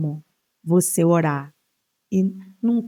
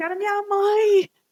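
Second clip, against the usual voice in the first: very high-pitched screaming yell. Retelling a friend's cry during a shootout at a party: imitating Monique screaming. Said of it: "Essa minha amiga em pé gritando".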